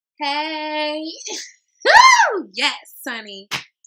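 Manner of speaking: very loud, very slow, swooping, elated, excited whoop. Pulling tarot cards that turn out good: really juiced, excited. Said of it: "Sorry, I'm really juiced".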